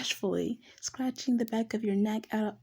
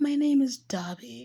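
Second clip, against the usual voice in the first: giggling, speaking through laughter. Speaker reading a story aloud, laughing while reading. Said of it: "I'm keep laughing at Dobby".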